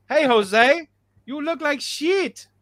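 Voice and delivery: bad, fake Spanish accent, slow. Trying another accent after being told English won't work, in a put-on Spanish accent. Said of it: "that was a beautiful Chinese accent".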